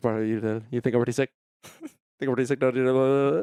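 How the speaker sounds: words tumbling out as fast as possible, breakneck. Quoting a movie scene line from memory: imitating rapid-fire talking. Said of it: "Just talking as fast as humanly possible".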